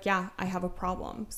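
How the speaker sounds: imitated facetious, joking tone. Quoting a man on the phone at work admitting it, mimicking a facetious admission. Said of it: "sounded like he was being facetious".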